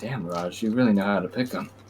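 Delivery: muttered under the breath. Player's character Brim remarking about Raj to himself, quietly under his breath. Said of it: "say quietly under his breath".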